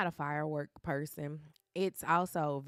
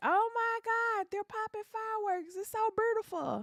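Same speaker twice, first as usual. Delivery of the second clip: acted, very high, shrill, thrilled scream. Telling how Lily reacted to fireworks, imitating Lily's excited scream. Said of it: "Lily just screamed".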